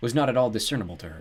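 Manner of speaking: ordinary delivery, nothing marked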